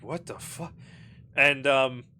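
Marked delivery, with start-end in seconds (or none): 0.0-0.7 very hushed, quiet mutter, cut short. Voicing a detective who walks in on a fight: quick mutter. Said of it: "gonna mutter, like, a very quick".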